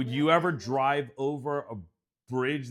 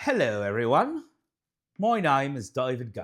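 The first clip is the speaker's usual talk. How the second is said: muddled, bad fake mix of Cockney and British accents; 3 dB louder than usual. Host introducing himself at the start of the episode, bad Cockney-British accent. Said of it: "It's a mix of I don't even know where you're going with this. Like Cockney and British".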